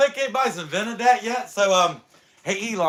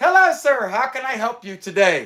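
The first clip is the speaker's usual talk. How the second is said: put-on robotic voice, louder; 5 dB louder than usual. Retelling a drive-thru order, imitating an ai order taker. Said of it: "A I says".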